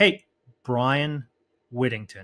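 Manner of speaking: slow, calm, unhurried, settled delivery. Speaker demonstrates opening a phone call by slowing down, slowed-down delivery. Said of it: "slow it down".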